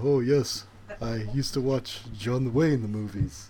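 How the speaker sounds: put-on, bad American accent. Describing a movie scene where an actor switches accents, Jean Reno's bad American accent. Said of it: "starts speaking in an American accent".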